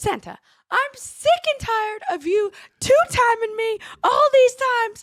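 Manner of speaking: puppet voice, diva style. Retelling telling Santa off for two-timing, sounding like Miss Piggy. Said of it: "sound like Miss Piggy?".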